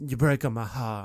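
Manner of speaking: attempted, put-on Italian mobster accent. A speaker jokes about Sanders going full mobster in a match, in an Italian mobster accent. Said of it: "That was my attempt at a Italian mobster".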